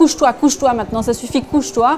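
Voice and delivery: mock exasperated yell.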